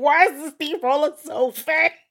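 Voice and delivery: loud yelled delivery. Retelling your reaction to a fast steamroller, retelling a yell. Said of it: "I yelled because I was like".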